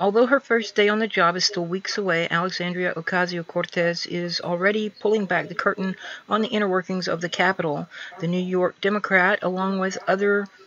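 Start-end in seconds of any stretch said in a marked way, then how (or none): none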